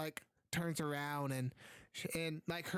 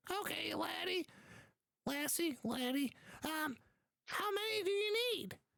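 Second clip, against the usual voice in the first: put-on very high, hunched old dwarf woman voice; 12 semitones higher than usual. Narrating the scene, voicing a blind elderly dwarf woman offering smoke bombs: elderly dwarf woman voice. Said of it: "you see like a hunched over elderly dwarf woman, and when she looks at you, she has like like like her eyes are wide over. She's blind, / you see like a hunched over elderly dwarf woman, and when she".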